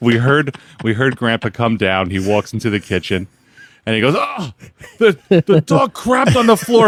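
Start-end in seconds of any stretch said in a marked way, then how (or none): 4.2-6.9 alarmed, loud outburst, very high pitched. Retelling what Grandpa said on finding the dog's mess: imitating someone freaking out. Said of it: "freaking out".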